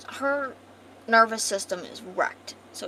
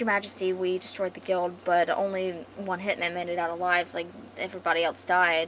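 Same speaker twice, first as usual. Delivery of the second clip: ordinary talk, nothing marked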